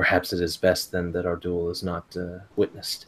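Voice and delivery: quiet, hushed, soft voice. Approaching you so that others can't overhear, a duelist speaks in a hushed voice. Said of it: "in a hushed voice so that the Otomo can't hear".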